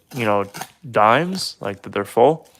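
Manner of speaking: usual speaking voice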